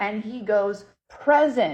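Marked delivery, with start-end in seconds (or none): 1.1-1.8 loud, hearty, folksy howdy-style voice. Retelling what a spirit answered at a store: imitating a spirit's howdy voice. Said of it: "in his voice, in his, like, howdy voice".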